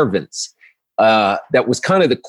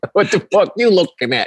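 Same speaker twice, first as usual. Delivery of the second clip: put-on Italian accent, higher pitch; 7 semitones higher than usual. Redoing their own old stage bit: imitating an Italian eye doctor. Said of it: "this is my impression of an Italian eye doctor".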